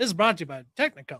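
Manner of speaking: put-on old-timey carnival barker announcer voice. Suggesting doing the rest of the show this way: put-on old-timey barker voice. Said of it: "Like old-timey Barkers".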